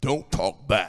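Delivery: very low, deep, booming baritone. Acting out the voice of authority in a household, deep baritone voice. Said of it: "this deep baritone voice".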